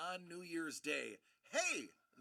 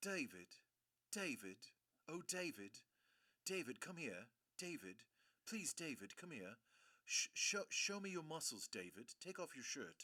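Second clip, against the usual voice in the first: put-on hushed, quiet English accent; 3 semitones lower, 5 dB quieter than usual. Retelling how the mother of a girl he dated called him, English accent. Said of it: "in her English accent".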